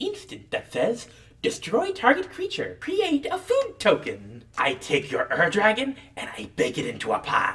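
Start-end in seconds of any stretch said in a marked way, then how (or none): 1.4-7.5 put-on storybook witch voice. Playing a card game, announcing a destroy spell in a witch voice. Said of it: "I have to do my witch's voice for this".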